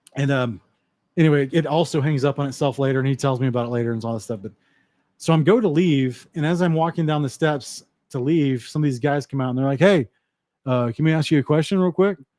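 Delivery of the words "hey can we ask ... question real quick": acted, taunting, swaggering, cocky bravado. Retelling guys asking a question while leaving a party: imitating mocking bravado. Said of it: "kinda like this, you know, mocking bravado".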